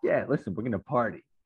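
creepy, shady dealer voice. Acting out how a shady dealer talks: imitating a creepy coke dealer. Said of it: "it's like a coke dealer".

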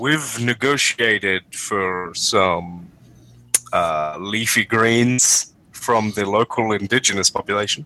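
deep, sultry radio voice. The narrator voices Billy Blacktop speaking over the radio, deep sultry voice. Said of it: "You hear the deep, sultry voice of Billy Blacktop come over the radio".

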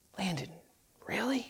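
very quiet, low, hushed whisper. Showing how they whisper to their kid instead of hollering, whispering. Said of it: "you'll whisper".

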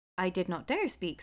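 ordinary delivery

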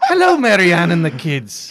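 very loud, swooping, put-on Irish brogue. Asked which accent they would go to right now, the speaker does an Irish accent. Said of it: "Probably an Irish one".

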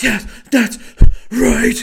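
breathless shout-whisper, very high and very loud. Mocking an actor's delivery of every line: imitating an actor's shout-whisper. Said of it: "either out of breath or trying to shout whisper".

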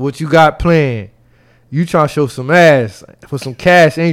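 ordinary talk

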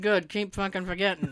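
quiet mutter under breath. Retelling her reply when a woman said she always forgets her, muttered under breath. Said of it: "under my breath i went".

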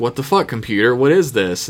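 ordinary talk, nothing marked

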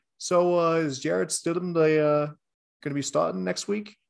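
put-on clumsy New England accent. Imitating a media member asking about next week's starter: bad New England media member accent. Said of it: "my attempt at a New England media member's accent".

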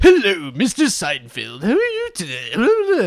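loud, slow, big talk-show host voice, swinging pitch. Retelling a fake interview to the others, imitating Jiminy Glick. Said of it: "He goes".

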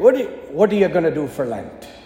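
put-on Irish accent. Retelling a priest's question after confession, in an Irish accent. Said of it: "in his Irish accent".

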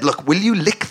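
normal talking voice

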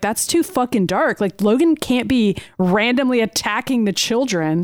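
ordinary delivery

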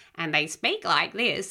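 slow, put-on parrot-like voice.

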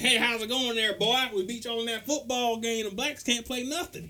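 put-on taunting, high-pitched rural country accent. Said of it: "talking in a country accent".

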